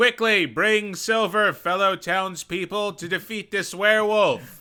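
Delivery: urgent, very loud, high rallying yell. On a tabletop game turn, the player's character calls to the townspeople, yelling. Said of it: "I'm going to yell".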